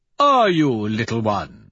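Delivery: voice turning hard, swooping tone. One character questions another, voice hardening. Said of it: "voice hardening".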